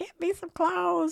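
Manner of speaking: put-on yelling, high and slow.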